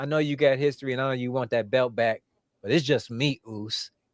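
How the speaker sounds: ordinary talk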